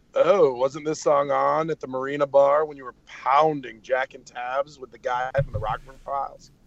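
snooty, condescending, wealthy-sounding announcer voice. Imitating a radio channel's voice that comes on and talks: imitating a condescending rich guy. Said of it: "this really condescending rich guy is what he would be like".

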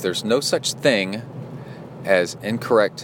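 ordinary talk, nothing marked

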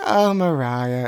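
casually dismissive, offhand brush-off tone. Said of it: "in such a dismissive way".

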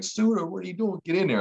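mock shrill yell, very high pitched, loud. Retelling being yelled at after a hard hit: imitating James Franklin yelling. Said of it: "James Franklin's yelling at me".

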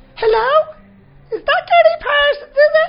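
put-on little old-lady voice, very high-pitched and very loud. Imitating an Instagram account with a little granny's face: little granny voice. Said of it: "they just put on a little voice on".

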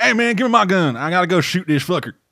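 put-on southern accent. Imitating how the game's robot characters talk: put-on heavy southern drawl. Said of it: "super heavy southern drawl".

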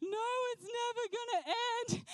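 mock tearful crying little girl voice, very high. Retelling a frightened little girl near the bottom of a mountain: imitating a crying little girl. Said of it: "she's crying and she's like".

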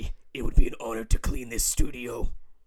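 deep, very loud, booming vigilante-style voice. Imitating how a character from the film talks: Lionel's Batman-like voice. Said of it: "That's just how he talks".

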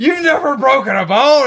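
high, loud yell.

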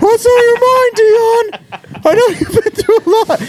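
very high, squeezed, squeaky cartoon voice. Acting out a coach asking Dion a question, in a Gingerbread Man from Shrek voice. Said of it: "Brady Hoke the gingerbread man from Shrek?".

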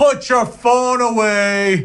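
mock very high, furious bellow from a distance. Warning moviegoers who have their phones out during the film, mock-angry booming shout. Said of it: "a booming, angry, bald guy from the back being like".

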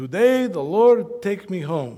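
put-on thick Polish Argentine accent. Retelling what a weak man told him days before he died: thick Polish Argentine accent. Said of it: "in his very thick Polish Argentine accent".

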